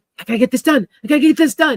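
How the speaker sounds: high, loud, rushed, harried voice full of urgency. Relaying a reading, voicing the listener's always-rushed self, acting out feeling rushed. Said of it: "you're always feeling very rushed".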